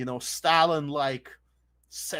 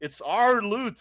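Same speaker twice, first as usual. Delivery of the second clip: put-on, pitched-up, growling pirate voice; 8 semitones higher, 4 dB louder than usual. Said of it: "You sound like a pirate right now".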